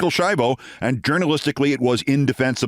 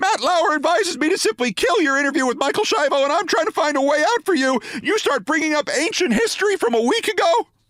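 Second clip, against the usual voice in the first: put-on, very high-pitched, shrill shrieking scream. Retelling what Kappas said to the speaker, retelling Kappas screaming high-pitched. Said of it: "began to scream again in an even higher-pitched voice".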